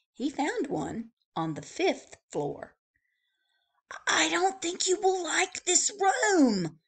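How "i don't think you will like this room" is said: whispering, much higher. The bellhop speaks to a guest on the fifth floor, whispering. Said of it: "whispered the bellhop".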